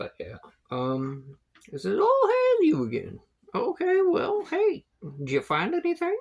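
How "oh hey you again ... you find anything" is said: put-on shrill, high, loud, sing-song, swooping goblin accent. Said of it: "comes up with different accents".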